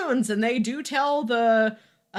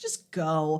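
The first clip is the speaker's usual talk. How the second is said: weary, exasperated, eye-rolling, dismissive brush-off; 7 semitones lower, 4 dB quieter than usual. Retelling a character's reply to a request for a kiss: imitating an eye-rolling tone. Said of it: "you can hear the eye roll in her voice".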